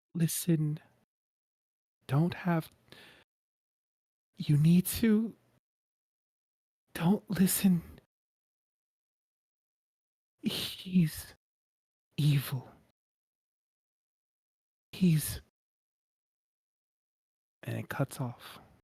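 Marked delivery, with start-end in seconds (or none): 0.2-15.4 muffled, garbled, raised voice cutting out. Voicing a dream voice that comes through in bits: muffled voice. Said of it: "You hear muffled bits".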